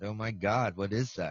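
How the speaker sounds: usual speaking voice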